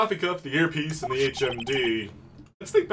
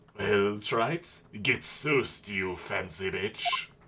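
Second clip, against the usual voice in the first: put-on old man voice, lower; 5 semitones lower, 4 dB quieter than usual. Reading the old man's line aloud in a game: Kudo voice. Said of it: "worst but best impression of Kudo".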